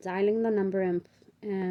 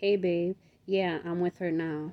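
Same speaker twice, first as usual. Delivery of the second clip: ordinary delivery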